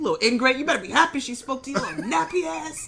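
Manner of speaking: furious, loud, high-pitched scolding outburst. Acting out scolding kids who ignore a greeting: imitating own angry yelling. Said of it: "So I'm yelling at the mother".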